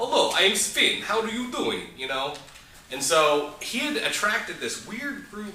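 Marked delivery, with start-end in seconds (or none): 0.0-1.8 fake Russian accent, laid on thick, pitched up. Retelling how a man claiming to be russian introduced himself, imitating a fake russian accent. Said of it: "it sounded something like this".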